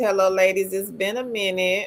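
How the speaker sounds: normal talking voice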